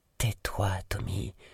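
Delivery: murmured words. Miranda speaks to Tommy, though he cannot hear her, murmured.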